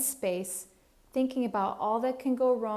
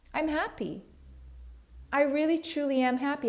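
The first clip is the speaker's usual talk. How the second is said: full conviction, pitched up; 5 semitones higher than usual. Demonstrating positive affirmations said out loud: said with conviction. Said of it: "three times with conviction".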